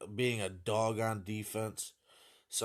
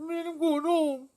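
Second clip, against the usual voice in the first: very high, loud fake crying wail; 7 dB louder than usual. Imagining a bloodied dunker running off the court: mock crying. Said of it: "Just crying".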